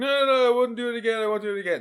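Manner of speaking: very high, loud crybaby wail, pleading. Imitating a kid in school running away after a punch: imitating a kid crying. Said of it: "crying and be like".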